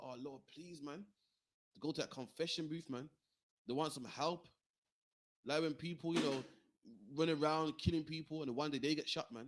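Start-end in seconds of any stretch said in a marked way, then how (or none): 0.0-1.0 weeping, crying, begging tone. Retelling how people cry to the lord for help: imitating someone crying out in plea. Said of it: "They cry to the Lord and say".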